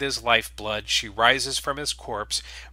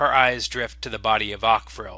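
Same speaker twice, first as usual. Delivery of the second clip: plain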